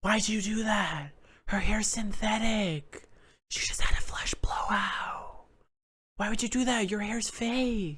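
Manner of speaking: high hushed whisper with word "fake" stretched out. Retelling a spa scene where they must whisper: imitating Lisa Barlow whispering. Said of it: "Lisa Barlow whispering".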